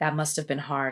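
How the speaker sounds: monotone, flat, emotionless, all feeling drained. Retelling how Jax answered her story: imitating an emotionless delivery. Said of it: "the way he said it was void of any emotion".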